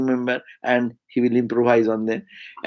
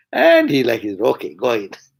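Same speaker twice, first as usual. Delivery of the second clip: ordinary talk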